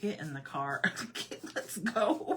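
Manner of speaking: slow, exasperated, eye-rolling tone. Retelling how he rolled his eyes at her panic: imitating an exasperated eye-roll. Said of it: "he's just rolling his eyes at me like".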